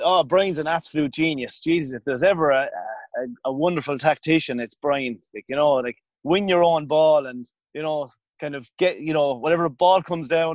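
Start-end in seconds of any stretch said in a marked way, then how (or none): 0.0-5.2 acted, ironic, sarcastic, insincere praising tone. Recounting going live on air, quoting own reply: retelling own sarcastic remark.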